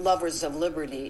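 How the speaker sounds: ordinary talk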